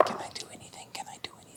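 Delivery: very quiet, hushed, breathy whisper. A player during a tabletop game session, whispering.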